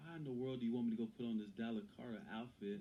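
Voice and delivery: normal talking voice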